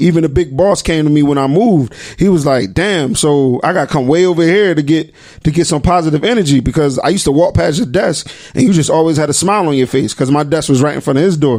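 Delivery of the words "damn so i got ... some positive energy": ordinary talk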